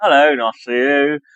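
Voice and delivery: brief put-on attempt at an English accent. Speaker tries the English accent they can't do on demand: put-on English accent. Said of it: "I'm not good at doing that on demand ... Like I can do it".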